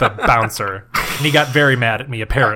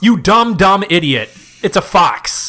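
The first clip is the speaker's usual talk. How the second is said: put-on belligerent, high, drawn-out, drunk-sounding rant; 6 semitones higher than usual. Scolding another speaker after a wrong answer: mock drunken belligerence. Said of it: "I get really belligerent when I'm drunk".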